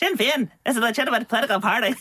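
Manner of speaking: put-on helium-balloon voice. Retelling a comedy sketch about a political spokesperson: Steve Coogan helium voice. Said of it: "take a burst from a helium balloon before he speaks".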